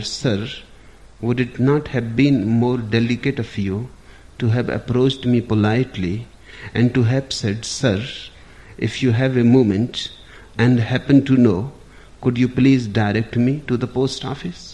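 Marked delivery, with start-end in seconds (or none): none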